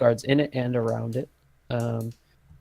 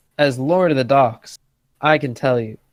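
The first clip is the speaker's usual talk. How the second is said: heavy, dripping sarcasm with raised voice; 8 dB louder than usual. Voicing a dock worker answering a player: very sarcastic. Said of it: "He's being very sarcastic".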